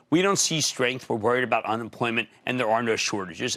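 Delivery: normal talking voice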